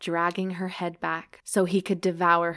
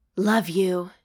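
broken, breaking voice, louder; 4 dB louder than usual. Reading a romance scene aloud, the hero's line: broken voice. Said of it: "his voice broken".

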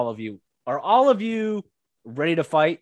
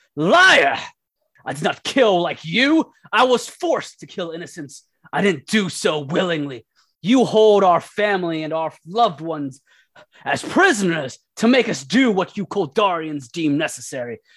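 furious, angry, yelled outburst; 3 semitones higher, 4 dB louder than usual. Voicing an impatient captive who yells at her captor: yelling in anger. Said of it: "she just yells out".

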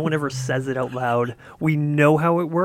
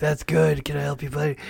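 put-on hoarse, lost-voice, whiskey-rough delivery. Recalling helping a customer as a department manager, he acts out his lost voice. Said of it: "I had lost my voice".

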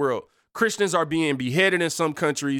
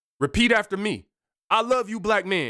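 play-acted, commanding, high-pitched scream; 5 semitones higher than usual. Retelling a video where a man with a bullhorn screams: imitating someone screaming.

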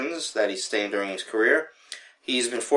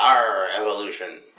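talking like a pirate; 3 semitones lower than usual. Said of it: "You wanna talk like a pirate?".

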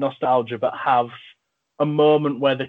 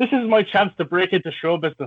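put-on Irish accent, pitched up; 5 semitones higher than usual. Giving a little example of acting range: Irish accent. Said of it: "my own acting range there with my Irish accent".

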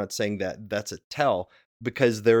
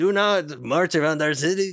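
cartoon put-on French accent, slightly high; 6 semitones higher, 3 dB louder than usual. Recalling VeggieTales' Josh and the Big Wall, the speaker imitates the peas' French accent. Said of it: "they have this French accent".

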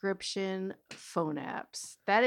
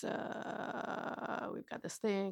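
put-on, very serious pilot voice, much quieter; 11 dB quieter than usual. Recapping a movie scene where a ship blows up, put-on very serious pilot voice. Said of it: "Very serious. Pilot voice".

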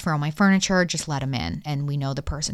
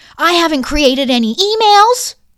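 very high, shrill, very loud screech; 14 semitones higher, 13 dB louder than usual. Have another try at acting out Liz answering about the email accounts, imitating Liz screeching. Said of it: "she like screeched it".

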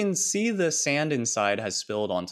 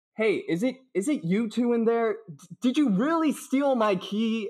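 muffled voice, higher pitch; 12 semitones higher than usual. Voicing an officer pounding on the door outside: muffled voice. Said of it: "and then a muffled voice".

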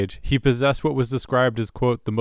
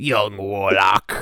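lower-pitched, put-on gremlin-like voice; 4 semitones lower than usual. Quoting a line from the show in a joke voice: John Hurt voice. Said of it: "our John Hurt voice".

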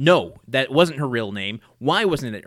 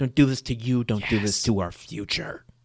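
put-on, imitated whispered delivery; 2 semitones lower than usual. Retelling a character's plea to Paul at the witness stand: imitating a whisper. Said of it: "it doesn't work when we're both whispering".

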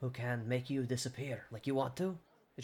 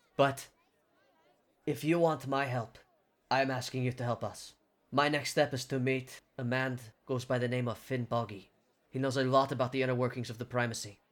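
plain

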